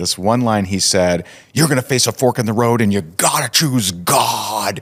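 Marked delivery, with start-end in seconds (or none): 1.5-4.8 emphatic put-on man's scream, "God" stretched out long. Speaker recalls a big man's one line to him, imitating a man screaming. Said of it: "he he is screaming".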